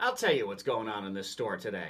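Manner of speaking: ordinary talk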